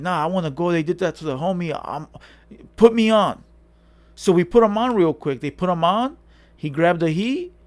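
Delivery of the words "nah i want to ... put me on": put-on angry, pissed-off voice. Retelling a homie demanding to be let in: imitating someone pissed off. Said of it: "he was all pissed off, like".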